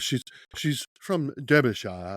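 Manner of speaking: slow, showy put-on British accent. Describing a character from Derbyshire; put-on British accent. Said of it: "there's my British accent for you".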